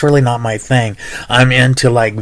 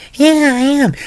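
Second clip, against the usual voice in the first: put-on very high, cute, girly, squeaky voice. Retelling a girl's reply when he asked if she was dancing; imitating a girl's cute high voice. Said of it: "She had the cutest fucking voice in the world".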